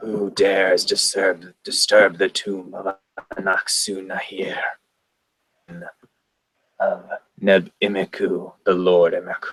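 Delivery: low, flat, unchanging droning monotone. Acting out how she delivers her line, in a low droning monotone. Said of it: "in a, just a droning monotone".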